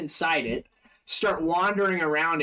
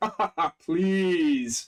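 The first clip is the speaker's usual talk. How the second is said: mocking, taunting character voice. Voicing a villain who taunts a player after dodging their claw: Barzillai taunting. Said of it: "and he's like".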